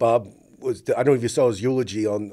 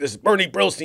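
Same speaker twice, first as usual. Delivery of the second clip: loud, aggressive, hard, high-pitched bark; 8 semitones higher than usual. Retelling a caller who never broke character: aggressive loud Bernie Brillstein impression. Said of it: "Bernie's really aggressive and very loud".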